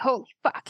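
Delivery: dumbstruck, shocked, high-pitched disbelief. Voicing a character recognizing old companions: stunned, in shock. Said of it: "He's kind of in shock".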